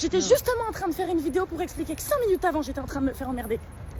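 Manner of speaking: loud, high-pitched, furious yelling.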